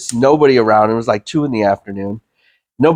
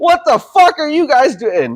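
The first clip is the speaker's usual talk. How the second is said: put-on scream, higher in pitch. Retelling screaming out alone in an empty movie theater: imitating own scream. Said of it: "I just screamed out".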